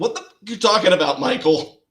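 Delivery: exaggerated New Jersey accent. Quoting her reply to a Pop-Tart request: exaggerated New Jersey accent. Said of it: "with the most New Jersey accent ever".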